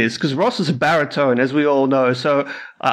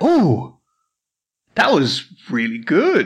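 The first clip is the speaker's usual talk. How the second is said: genuinely surprised, swooping exclamation. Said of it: "You sound surprised".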